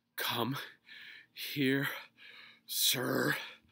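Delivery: very loud, winded, breathless gasping and panting cry. Chasing after someone and unused to running, he pants. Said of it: "panted Mr. Grumpy".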